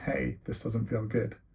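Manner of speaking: plain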